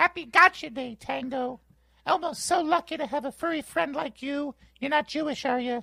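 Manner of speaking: high-pitched furry puppet voice. Voicing a picture of Elmo with a puppy puppet, speak to the puppy in an Elmo voice. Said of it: "You're very good at Elmo's voice".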